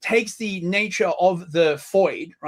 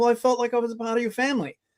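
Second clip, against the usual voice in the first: higher, mock-polite, put-on British voice; 5 semitones higher than usual. Mocking an argument about family, speaker voices someone breaking in, put-on polite British tone. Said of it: "it just sounds so British and polite".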